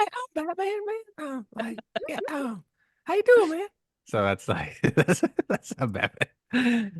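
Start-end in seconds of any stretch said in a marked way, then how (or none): 0.0-3.7 very high, cartoonish superhero character voice. Taking a turn at Batman impressions with others: cartoon Batman voice. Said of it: "it's just like the cartoon".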